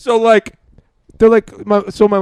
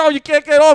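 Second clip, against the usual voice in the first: mock screaming, high-pitched yelp; 6 semitones higher than usual. Retelling grabbing someone on a ride: imitating someone screaming. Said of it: "Screaming, you're screaming".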